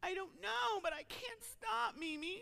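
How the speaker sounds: mock, high-pitched, drawn-out bawling through every word. Retelling how a girl answered why she was crying, imitating her bawling. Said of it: "she starts bawling".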